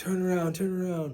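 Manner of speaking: play-acted, high-pitched screaming. Retelling how someone screamed at them to turn back: imitating someone screaming. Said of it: "he starts screaming at, screaming at us".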